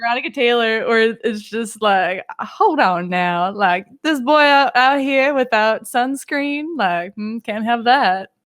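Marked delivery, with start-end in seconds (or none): 2.4-8.3 put-on cowboy voice. Imagining how a 4Kids voice actor would say it; Veronica Taylor's cowboy voice. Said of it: "I can hear her four kids voice".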